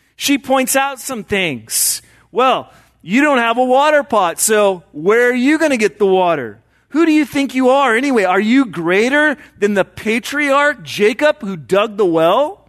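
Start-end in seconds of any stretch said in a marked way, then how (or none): 2.3-12.5 mock, slightly condescending, talking-down tone. Retelling a woman's replies to Jesus at the well: imitating a condescending tone. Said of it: "her responses are a little condescending".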